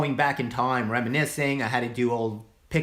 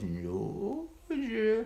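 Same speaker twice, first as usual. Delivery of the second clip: sinister swooping villain voice; 8 semitones higher, 8 dB quieter than usual. Showing a Mister Potter voice: Mister Potter voice. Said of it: "He's got the up and down voice".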